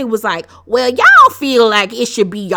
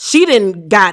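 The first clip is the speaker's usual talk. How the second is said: ordinary talk, nothing marked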